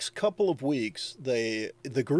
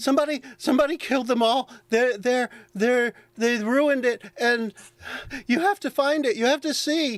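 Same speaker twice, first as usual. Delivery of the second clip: very high, frantic, breathless, panicked gnome voice; 10 semitones higher than usual. Voicing the gnome messenger reporting killings: panicked breathless gnome. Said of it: "Calm down, calm down, Wrexham".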